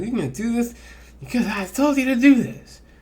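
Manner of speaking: very high, bossy, ordering-around tone. Impression of a human ordering an angel around, mock-bossy tone. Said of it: "my impression of a bossy person towards an angel".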